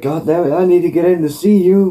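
angry, demanding tone. Retelling a man demanding entry at a gate: imitating someone demanding. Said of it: "he starts demanding".

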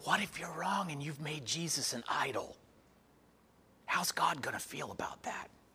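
small, soft, half-whispering inner voice. Voicing a little voice from his childhood that speaks to him, retelling a half-whispering inner voice.

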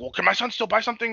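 high, irate, angry delivery. Recounting a scene at a store, the speaker is imitating a pissed-off man. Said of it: "came in all pissed off".

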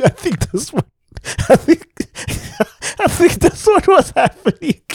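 talking while laughing, high-pitched.

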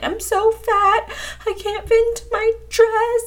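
put-on very high, drawn-out tearful sob. Retelling calling their mom while freaking out over a dress, imitating crying. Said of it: "basically crying".

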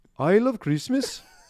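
accent from Iceland. After apologizing to everyone listening in Iceland, read the line with an Icelandic accent. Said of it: "read the next line with an Icelandic accent".

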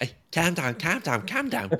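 high-pitched mock Scouse accent.

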